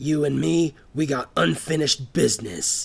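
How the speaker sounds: growled through gritted teeth. Reaching Jack through the crowd, Chuck grabs his collar, growled through gritted teeth. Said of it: "he growled through gritted teeth".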